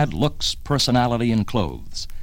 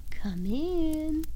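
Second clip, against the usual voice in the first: sugary sweet, very high, soft voice; 7 dB quieter than usual. Telling a joke, a voice behind the bedroom door answers the boss's knock: sweet tone. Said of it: "in a sweet tone".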